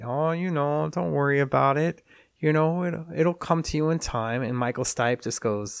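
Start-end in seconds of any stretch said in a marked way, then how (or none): 0.0-4.4 put-on light, friendly-sounding Minnesota accent, pitched up. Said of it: "with her little Minnesota accent".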